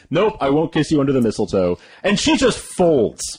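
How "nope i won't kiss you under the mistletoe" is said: ordinary talk, nothing marked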